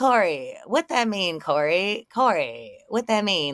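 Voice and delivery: teasing, needling, mocking repeated taunt. Retelling a sidewalk confrontation, taunting the other person: imitating own mocking taunt. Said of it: "making fun of him".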